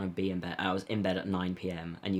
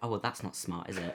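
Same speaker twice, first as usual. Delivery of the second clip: put-on passive-aggressive mutter under breath, much quieter; 8 dB quieter than usual. Describing getting annoyed at slow walkers in London, mock passive-aggressive under-breath mutter. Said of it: "passive aggressively under my breath just be like".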